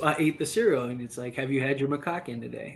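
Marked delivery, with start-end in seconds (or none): 1.3-2.8 solemn, no-joke, dead serious straight delivery. Pitching a made-up cereal as a joke: said very seriously. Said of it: "He says it so seriously".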